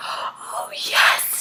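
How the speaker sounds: soft, unvoiced whisper.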